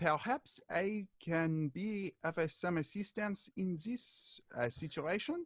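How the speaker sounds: tiny voice, small, high and soft. During a scene, a bystander speaks up from the crowd; small voice. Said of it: "you hear a small voice say".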